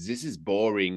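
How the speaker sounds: put-on German-accented speech. Retelling what Roland said on coming into the cell, in a German accent. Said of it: "with a German accent".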